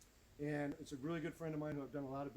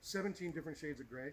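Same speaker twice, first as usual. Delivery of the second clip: ordinary delivery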